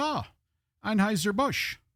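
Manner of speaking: high-pitched, horrible, bad Irish accent. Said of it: "My horrible Irish accent".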